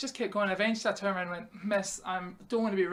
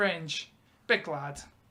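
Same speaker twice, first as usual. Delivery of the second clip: ordinary talk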